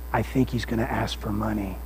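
hushed voice kept low. A pastor retells a woman's warning at his office door, imitating a low half-whisper. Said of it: "she kind of whispers in a low voice".

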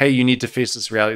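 ordinary delivery

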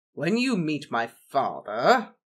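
said with a growl. Narrator reads Gaius answering Remus, growled. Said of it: "Gaius growled".

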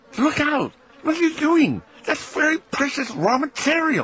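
piercing, very high shrieking cry. In a stable, the professor suddenly calls out to the narrator; shrieking cry. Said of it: "he cried".

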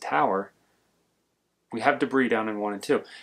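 soft, barely audible, too quiet delivery. Imitating the pace car driver's radio call, imitating someone talking too quietly. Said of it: "he talks like this and you can't really hear him".

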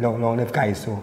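ordinary delivery

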